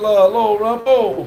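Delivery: normal talking voice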